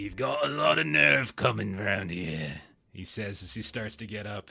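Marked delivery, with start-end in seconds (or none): 0.0-2.5 put-on rough, grungy British accent. Voicing a character in a scene as he starts to get up, generic grungy British accent. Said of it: "I can just do generic grungy British accent".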